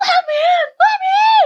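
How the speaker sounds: acted-out frantic screaming. Recounting people trying to open the locked door, retelling their screaming. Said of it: "like screaming".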